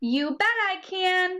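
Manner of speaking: lively, excited, high and drawn-out exclamation. Lesson on exclamation points, repeat after me: excited. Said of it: "when you see an exclamation point, you say that with excitement. Repeat after me".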